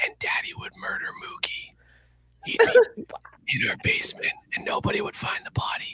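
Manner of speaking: hushed, breathy whisper. Retelling what was whispered in a child's ear before the show: retelling a whisper. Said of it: "And then I whispered in his ear".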